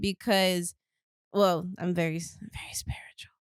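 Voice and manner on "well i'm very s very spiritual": soft, hushed whisper under the breath. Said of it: "Don't whisper that".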